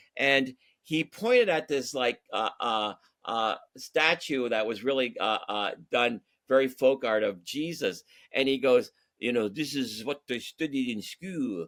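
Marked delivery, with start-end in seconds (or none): 9.2-11.7 bad put-on French accent, quieter. Retelling what a friend said at a museum: bad Clouseau impression. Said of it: "I'm doing a, a, a, a bad, uh, Clouseau".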